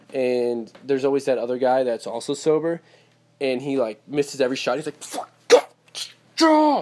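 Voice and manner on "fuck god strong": mock very high, shrill, furious outburst. Imitating a sober beer pong player who misses every shot: imitating an angry outburst. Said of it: "getting so mad".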